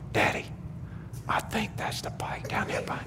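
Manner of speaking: frightened, barely voiced, very hushed scared whisper. Recounting telling their dad about the bike from the car, retelling a scared whisper. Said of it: "but I'm whispering".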